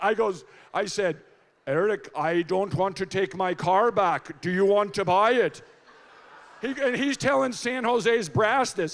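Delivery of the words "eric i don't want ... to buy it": imitated Finnish accent. Retelling a phone call offering to sell a car: put-on finnish accent. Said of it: "I did my Finnish accent".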